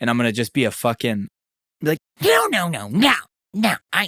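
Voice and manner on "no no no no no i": each "no" drawn out, pitched way up high. Acting out a plan for a job interview: terrible Steve Jobs impression. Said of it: "that's a terrible Steve Jobs impression".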